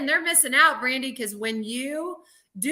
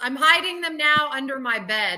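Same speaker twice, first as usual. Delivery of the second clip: normal talking voice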